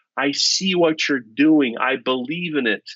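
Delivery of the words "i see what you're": plain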